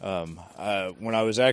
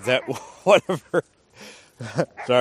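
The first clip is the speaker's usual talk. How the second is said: breaking into laughter mid-sentence, laughing through. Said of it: "I'm not laughing at the subject material".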